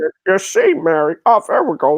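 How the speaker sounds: stumbling on the first word. Doing an impression for another speaker after a failed try: Jimmy Stewart impression. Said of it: "I found my Jimmy Stewart".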